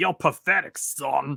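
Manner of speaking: horror-game killer monster voice. Describing a game villain killing the player, imitating Jack. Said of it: "rip your head off and then go, like".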